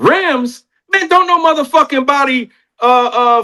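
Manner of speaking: high, irritated, heated, annoyed tone. The speaker retells the reply to a phone business proposal; imitating Charleston, irritated. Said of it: "Charleston was like".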